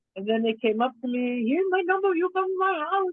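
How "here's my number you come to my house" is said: very high-pitched, put-on Chinese accent. Retelling invitations from the people after a performance: put-on Chinese-sounding accent. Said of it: "I sound Chinese right now".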